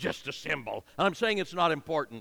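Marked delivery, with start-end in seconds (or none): 0.0-0.8 throaty, guttural, dismissive, belittling intonation. Showing how tone alone can denigrate a word, in a guttural, dismissive tone. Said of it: "if I kind of clear my throat and gutturalize it when I put it out, I denigrate it just by tone and intonation".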